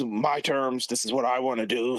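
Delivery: put-on domineering, laying-down-the-law boss voice. Imitating a wrestling boss who never played well with others: Vince McMahon impression. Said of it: "Sorry for the impression".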